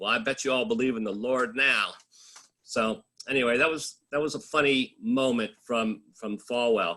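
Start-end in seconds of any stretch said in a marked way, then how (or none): 0.0-1.9 mock deadpan delivery. Recounting a funny moment from an interview, retelling a deadpan remark. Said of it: "he looks at us real deadpan".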